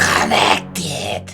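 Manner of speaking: connected, cracked, distorted, breathy, glitchy whisper. Imitating a device's broken connection prompt: broken, crackly 'connected'. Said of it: "이런 식으로 깨져서 나와".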